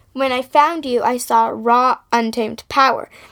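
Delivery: ordinary delivery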